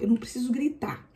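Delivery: quick quiet whisper.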